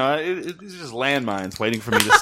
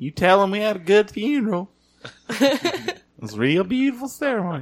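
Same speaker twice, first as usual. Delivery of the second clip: high, put-on Texas accent; 8 semitones higher than usual. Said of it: "What's that voice is that?".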